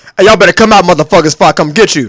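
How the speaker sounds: loud club bouncer voice. Hyping up a live show at a bar, in a club bouncer voice. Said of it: "bouncer voice".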